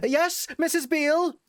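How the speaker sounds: very high shouted yell. Voicing a servant answering from below: yelling back up the stairs. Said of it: "yell back up".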